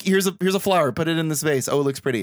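ordinary talk

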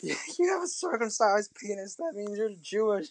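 put-on, full-on, confronting high-pitched scream. Recounting a film scene where a woman screams at a kid, imitating someone screaming. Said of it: "coming at him screaming like".

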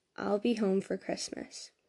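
plain reading voice

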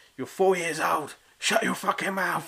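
put-on high, yelled shouting. Retelling shouting at a barking dog out the window: retelling a shout out a window. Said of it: "I just shouted out the window".

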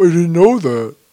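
put-on dumb straight-man voice. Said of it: "every girl I've dated has done this impression of me".

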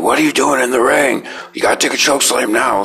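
shrill, high, angry scream. Speaker recalls a man in the ring screaming at him: retelling someone screaming. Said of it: "he's screaming at me".

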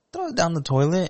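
very high voice that cracks. Insisting on a point in a debate with another speaker: voice cracking. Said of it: "your voice cracked".

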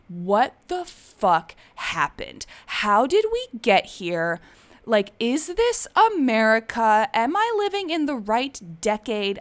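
mock restrained mild yell with swooping, rising pitch. Retelling screaming into the universe from the couch, retelling a scream. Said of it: "I just started screaming into the universe".

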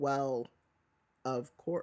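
slow, deliberate, drawn-out, low, hushed voice. The speaker acts out Xenophilius replying, saying it slowly. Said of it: "raises his eyebrows and goes slowly".

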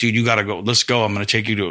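normal talking voice

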